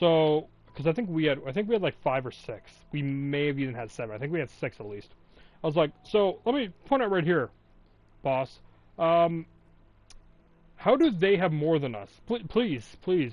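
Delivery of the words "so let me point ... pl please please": mock smart-aleck, faux-polite, snide, needling, pleading tone. Retelling pointing out numbers to the boss: retelling being a dick. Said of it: "being a dick about it, too".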